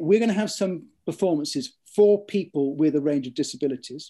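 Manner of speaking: plain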